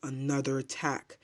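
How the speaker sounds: plain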